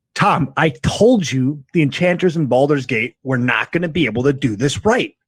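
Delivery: playful, half-serious mock scolding, lightly teasing. Walking up to an enchanter in character, mockingly berating a companion. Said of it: "mockingly berating Nashimo a little bit".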